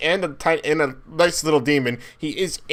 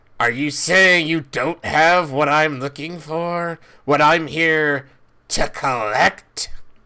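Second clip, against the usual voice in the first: slow demon voice, spoken with a grin; 3 dB louder than usual. Voicing a demon who came to collect something: grinning demon voice. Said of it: "you hear him grin and say".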